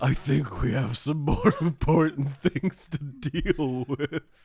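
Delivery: loud, high-pitched, big cartoonish voice. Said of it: "he sounded very much like Yogi Bear".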